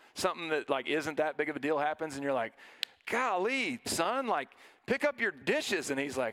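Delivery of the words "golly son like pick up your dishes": irritated, short-tempered snap, slow and deliberate. Acting out a parent who snaps at a son over dishes: acting out snapping at someone. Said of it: "you're a little more prone to snap".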